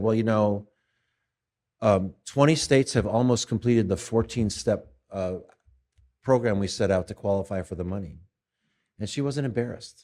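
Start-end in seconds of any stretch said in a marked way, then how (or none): none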